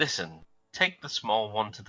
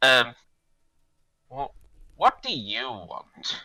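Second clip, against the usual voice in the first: put-on loud, slurred drunken speech, words smeared together; 3 semitones higher, 6 dB louder than usual. Narrator voicing a character answering the party: slurred speech. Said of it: "He slurs and says".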